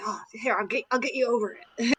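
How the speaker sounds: soft, hushed little half-whisper. Imitating Blink offering to get the speaker over it: Blink half-whispering. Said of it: "gave me a little, like, whisper".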